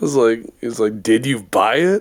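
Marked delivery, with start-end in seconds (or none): 1.0-2.0 put-on accusing tone of voice. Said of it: "it is always accusatory".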